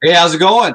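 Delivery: loud, high-pitched, booming outdoor voice. Greeting another speaker on joining the call: loud voice. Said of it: "you're loud".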